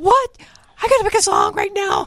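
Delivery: high, half-shouted incredulous outburst.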